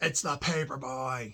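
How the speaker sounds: put-on yelling. Former paper boy recalls the man answering his wife, retelling a man yelling back. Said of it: "he'd yell back".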